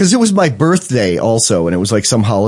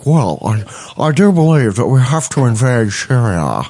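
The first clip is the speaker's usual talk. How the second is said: put-on Long Island accent through a locked jaw. Mimicking him half an hour later, in Long Island lockjaw accent. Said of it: "he has Long Island lockjaw. He's like".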